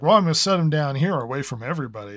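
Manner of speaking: mock sarcastic, dry tone. Retelling what was said when cookies were dropped off: own sarcastic remark. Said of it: "like, sarcastically".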